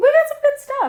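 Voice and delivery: silly squealing voice.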